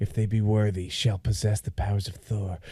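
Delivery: soft half-whisper under the breath. Retelling a movie scene where a king half-whispers to a hammer: imitating a half-whisper. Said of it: "whispers to it".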